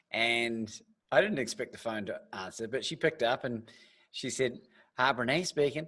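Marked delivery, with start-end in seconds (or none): 4.9-5.8 put-on drawling Southern accent. Retelling a phone call, quoting Brené Brown answering: Brené Brown Southern drawl. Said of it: "and my best Southern drawl".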